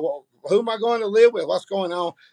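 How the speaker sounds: put-on tearful voice, words broken by sobs. Retelling a daughter's questions after bad news: imitating a crying daughter. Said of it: "my daughter just falls out crying".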